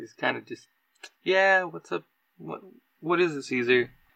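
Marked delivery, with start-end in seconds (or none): 1.2-3.9 dejected, slumped, deflated, sagging voice. Voicing p j, who slumps over when called: slumped, deflated voice. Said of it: "P J kinda, like, slumps over".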